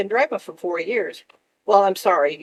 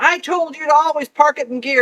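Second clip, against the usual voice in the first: put-on furious dad voice, loud, high-pitched screaming; 8 semitones higher, 5 dB louder than usual. Retelling an angry parent's words after a car rolled: imitating dad screaming. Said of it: "just screaming at me".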